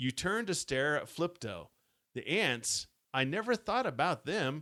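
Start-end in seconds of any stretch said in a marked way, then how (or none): none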